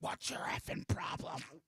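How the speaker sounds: mock, furious, angry, breathy whispered outburst. Retelling his wife yelling at the hotel front desk: imitating his wife's angry outburst. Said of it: "Just angry".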